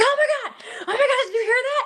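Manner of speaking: mock very high, fast, overexcited chatter. Retelling how other investigators react to a sound: imitating excited investigators. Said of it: "everyone's like".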